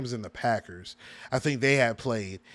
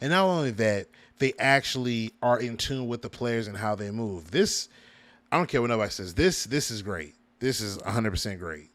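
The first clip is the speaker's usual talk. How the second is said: ordinary talk, nothing marked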